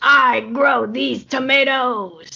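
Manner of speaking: exaggerated stage whisper. Turning to Mulligan in a roleplay scene, speaking in a loud stage whisper. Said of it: "sort of kind of whisper. It's very loud".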